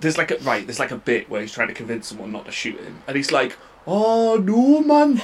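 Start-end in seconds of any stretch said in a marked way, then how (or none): 3.9-5.2 exaggerated Geordie accent, much higher and slower. Imitating a man begging someone not to shoot him, exaggerated geordie accent. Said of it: "That's like how people would do our accent".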